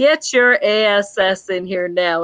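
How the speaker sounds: put-on gruff, gritty nurse voice. Retelling how the ICU charge nurse answered the phone: imitating a gruff, gritty nurse. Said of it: "She was kinda your gruff, gritty type woman".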